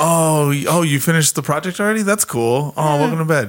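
passive-aggressive niceness. Acting out a partner welcoming someone to bed: imitating a passive-aggressive tone. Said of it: "passive aggressively".

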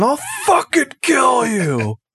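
mock swooping old-timey scream, high and drawn-out. Imitating old-timey duelists screaming a threat: imitating someone screaming. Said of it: "old-timey guys screaming".

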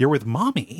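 put-on doting tone. Retelling how she talks to the boys she tied up: imitating doting talk. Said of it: "doting on them".

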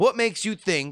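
ordinary delivery

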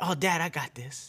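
put-on independent girl voice. Acting out a daughter refusing help: imitating Mila. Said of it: "her famous words that she tells everybody".

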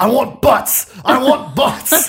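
yell pitched very high and stretched out. Retelling a man yelling after coffee spilled all over him: retelling a yell. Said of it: "He just keeps yelling".

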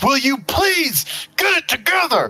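very high, shrill, swooping scream. Playing a character in a fight who screams at another. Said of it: "I just scream".

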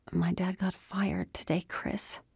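muttered quietly. Andy, looking down at her hands, answers chris, muttering quietly. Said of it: "She muttered quietly".

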